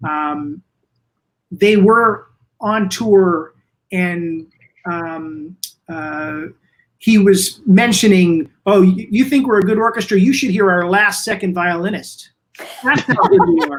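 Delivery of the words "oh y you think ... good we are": play-acted, dry, backhanded sarcastic tone. Retelling a conductor's remark to the orchestra on tour: retelling a sarcastic remark. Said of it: "said in kind of a sarcastic way".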